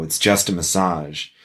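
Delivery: dry, expressionless, deadpan delivery. Retelling how kink clients answer during a negotiation, retelling a deadpan reply. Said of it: "they look at me deadpan and go".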